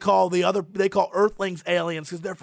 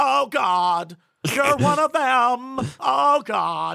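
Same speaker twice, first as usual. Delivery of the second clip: high-pitched fake American accent; 6 semitones higher, 3 dB louder than usual. Quoting the Die Hard scene where Hans is caught, Hans's fake American accent. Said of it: "he does his American accent. He's like".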